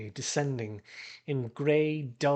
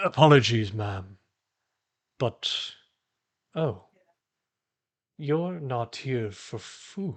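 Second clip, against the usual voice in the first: deep, rich, resonant, unhurried voice; 3 semitones lower, 3 dB louder than usual. A game narrator voices a glassy figure speaking to a player's character: deep, rich voice. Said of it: "a deep, rich timbre of his voice".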